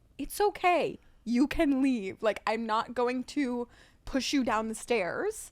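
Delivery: nice, gentle, kind, reassuring tone. Retelling own past words to a departing guest: retelling a nice, gentle tone. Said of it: "I said it like".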